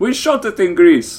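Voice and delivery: put-on Greek accent, pitched very high. Retelling a man's answer about how they drank it, in a greek accent. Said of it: "Is that Greek accent?".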